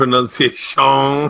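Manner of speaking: put-on Cajun accent. Arguing over how a word is said, saying it in a Cajun Man accent. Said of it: "You're doing the Adam Sandler, Cajun man".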